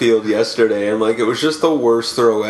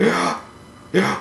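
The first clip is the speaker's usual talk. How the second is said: high, breathed-in, gasped yeah. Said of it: "they breathe in but say "yeah"".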